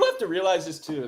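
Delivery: loud voice breaking mid-phrase. Speaker making a point about a baseball player, voice cracking. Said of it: "that was a crazy voice crack".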